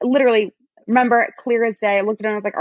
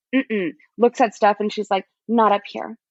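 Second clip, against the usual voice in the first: usual speaking voice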